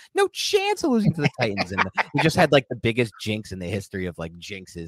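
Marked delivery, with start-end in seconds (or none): 0.2-1.7 very high-pitched, swooping, sing-song voice. Quoting what a man said, imitating his very high voice. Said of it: "I'm imitating his voice because he's a very high voice".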